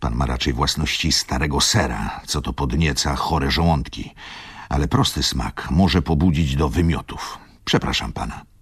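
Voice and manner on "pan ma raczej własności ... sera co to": plain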